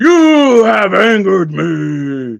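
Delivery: booming god voice, pitched very high, "me" stretched. Player explains what a magic spell can do, demonstrating a booming godlike voice. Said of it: "make your voice boom and be like".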